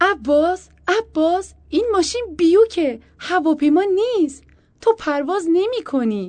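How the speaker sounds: very loud, very high shriek through laughter. Calling out to Abbas as he drives, shouting while laughing. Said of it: "با خنده فریاد کشید".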